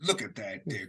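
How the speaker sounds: put-on patronizing, condescending, talking-down tone. Voicing a character praising the group's soup kitchen work: patronizing. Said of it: "Don't patronize us".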